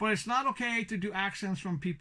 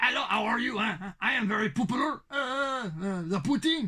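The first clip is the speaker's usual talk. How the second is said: laid-on, fake Quebecois French accent; 3 semitones higher, 4 dB louder than usual. Showing the fake Quebecois accent an acquaintance used to do. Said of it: "what a fake Quebecois accent is".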